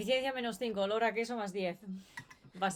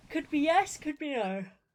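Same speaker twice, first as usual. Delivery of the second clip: high, loud yawn in the middle of speech; 5 semitones higher, 5 dB louder than usual. Speaker, unsure of the answer to a question, replies yawning while speaking. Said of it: "I'm yawning a lot".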